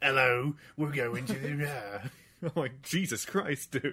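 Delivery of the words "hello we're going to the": heavy, thick, laid-on put-on British accent. Imitating the hard-to-understand British accents in a game, British accent. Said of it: "the British accents are fucking hard in this game".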